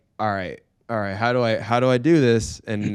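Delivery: plain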